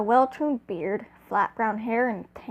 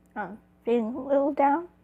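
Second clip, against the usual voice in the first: cracking, breaking voice; 4 semitones higher than usual. Speaker talks about graduating, voice cracking. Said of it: "Voice crack, sorry".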